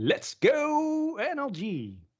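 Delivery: very high, very slow sing-song cheer, go stretched. Reading out a viewer's chat message aloud: impression of Lupa. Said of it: "that was a pretty good impression".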